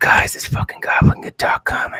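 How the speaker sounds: muttered, hushed whisper under the breath. Coming in, a character warns the group about an arrival, whispering under breath. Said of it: "I kind of whisper, like under my breath".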